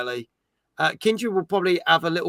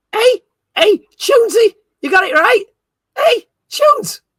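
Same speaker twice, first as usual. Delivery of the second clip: terrible fake Liverpudlian accent, very high and loud; 7 dB louder than usual. Asked on stream to try a Liverpudlian accent, attempting a bad Liverpudlian accent. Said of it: "can you try a Liverpudlian accent".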